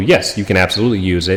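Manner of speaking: normal talking voice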